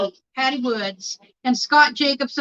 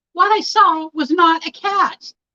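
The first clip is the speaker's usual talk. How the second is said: put-on spooked, frightened, fearful voice; 4 semitones higher than usual. Performing a quote over again for the others, in a put-on fearful voice. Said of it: "she said in her best fearful voice".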